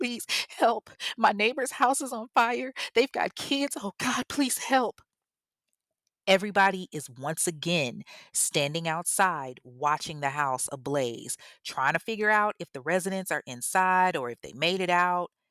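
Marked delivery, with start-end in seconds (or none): 0.0-5.0 mock tearful, high, frantic, panicked crying. Retelling a neighbor's emergency call about a house fire: imitating someone screaming and crying. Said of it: "she's screaming and crying".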